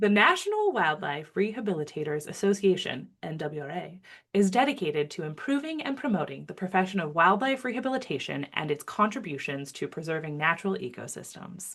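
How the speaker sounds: polished, smooth announcer delivery. Reading the association's mission statement aloud on a podcast, in announcer voice. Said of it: "I used my special announcer voice there".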